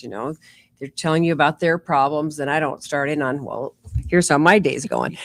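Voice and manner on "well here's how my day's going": plain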